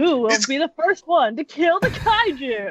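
hyped game show host voice, drawn-out "kaiju". Pretending to host a game show with a little mic: game show host voice. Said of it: "You bring out a little mic".

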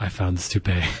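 utterly still, restrained, low, hushed delivery. Retelling what a man said after asking to speak to them; retelling someone speaking very quietly. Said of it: "he's like very quiet and still when he's like".

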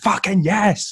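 play-acted all-out scream, very high pitched. Retelling filming players warming up by the pitch, re-enacting own scream. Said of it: "i just screamed".

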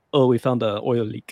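best-attempt put-on Russian accent. Retelling what Russia said about shutting down Nord Stream 1, in a Russian accent. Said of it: "that's my best Russian".

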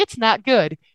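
plain

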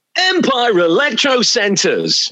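awful hyped-up cheesy radio DJ voice, high and swooping. Recalling the DJ voices they did as teenagers, he redoes the client's name: horrific DJ voice. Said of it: "doing in these horrific DJ voices".

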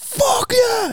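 put-on scream. Telling how a man watching TV reacted to winning his bet, retelling a scream. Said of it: "he's screaming at the TV".

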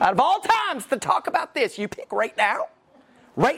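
high, fuming, angry voice, full of heat. Speaker retells what his wife said to him yesterday, imitating his wife's voice. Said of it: "She said it just like that with that voice right there".

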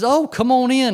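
nice little sweet schoolteacher voice. Retelling a woman inviting him inside, imitating her sweet schoolteacher voice. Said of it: "and this nice little sweet school teacher voice".

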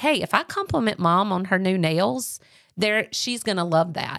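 normal talking voice

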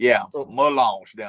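slight put-on Cajun accent. Telling a trip story, the speaker says a place name as they like to: slight Cajun accent. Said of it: "as we like to say it with a little accent".

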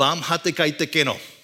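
mock angry, slow speech in Bengali. Retelling the restaurant owner's question in bengali: imitating an angry shopkeeper. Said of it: "you could tell he's angry".

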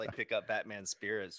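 ordinary talk, nothing marked

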